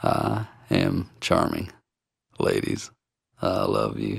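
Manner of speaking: smooth, soft, breathy voice with creaky vocal fry. Giving an example of vocal fry in speech, Bill Clinton impression. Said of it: "former U.S. President Bill Clinton with his".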